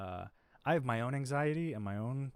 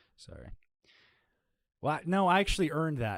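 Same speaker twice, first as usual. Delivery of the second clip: ordinary talk, nothing marked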